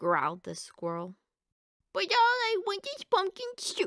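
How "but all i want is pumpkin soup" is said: very high, shrill, loud wail. A duck answers the squirrel in a squabble over soup, howling. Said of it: "howled the duck".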